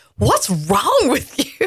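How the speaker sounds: mock disgusted teenager voice, high and swooping. Retelling what a teenage son said in the car: imitating a disgusted son. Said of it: "with such disgust on his face".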